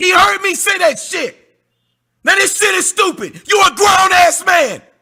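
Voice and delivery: angry, heated. Accusing an opponent of lying during a debate, angry, heated. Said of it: "Calm down, [name]".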